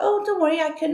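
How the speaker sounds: mock pushy insistence. Retelling how a photo seller at a supermarket pressed her: imitating a pushy saleswoman. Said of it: "she was a bit pushy".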